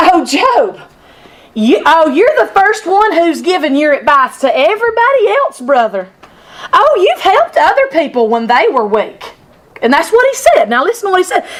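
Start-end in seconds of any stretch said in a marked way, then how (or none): 0.0-9.2 mock biting, sarcastic, snarky needling tone. Acting out Eliphaz's words to Job in a snarky attitude: imitating a snarky Eliphaz. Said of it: "in a snarky attitude, like kind of like this".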